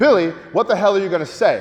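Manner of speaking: plain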